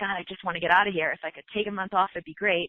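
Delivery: put-on miserable, weary tone. Imitating overworked doctors who want out: imitating a miserable doctor. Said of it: "how many doctors are miserable".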